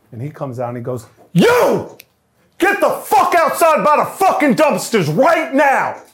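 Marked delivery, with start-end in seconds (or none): 1.3-5.9 very high, shrill, furious drawn-out yell, swooping. Retelling a boss ordering him outside: imitating someone yelling. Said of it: "He wipes the spit off his lip".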